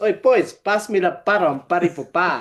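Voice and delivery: casual, relaxed calling-out voice. Retelling a golf story, quoting Mussy on the green: imitating Mussy. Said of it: "he'd go to the boys".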